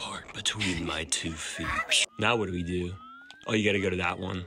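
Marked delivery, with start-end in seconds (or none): 0.0-1.7 scary voice. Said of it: "You need to do it in a scary voice".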